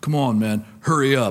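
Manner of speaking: loud, gruff voice of a big man. Retelling a big guy who spoke up behind him, big gruff voice. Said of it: "this big gruff voice behind me".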